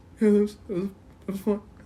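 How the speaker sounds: soft, rushed, wobbly, shaky voice, sounding tearful. Retelling someone who had just stopped crying, imitating a shaky voice. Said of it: "you can tell he was still shaky".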